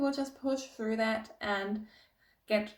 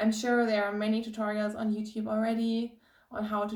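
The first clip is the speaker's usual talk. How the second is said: plain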